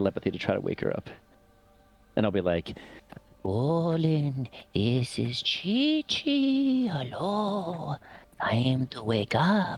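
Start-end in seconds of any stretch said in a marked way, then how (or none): 3.4-9.8 swooping granny voice, very high and very slow. Using telepathy to try to wake a sleeping character: old lady voice. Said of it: "you sound like an old lady".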